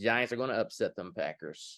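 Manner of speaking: ordinary delivery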